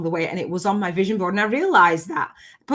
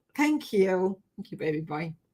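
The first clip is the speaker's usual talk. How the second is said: teary, close to crying, holding back tears; 7 dB quieter than usual. Thanking someone after hearing a story about a late son: tearful, holding back tears. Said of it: "I've got tears".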